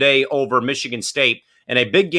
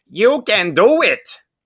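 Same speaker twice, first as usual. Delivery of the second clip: high-pitched, very slow, stretched-out drawl; 8 semitones higher, 4 dB louder than usual. Reading out a viewer's comment: Rob Schneider impression. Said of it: "Rob Schneider impersonation".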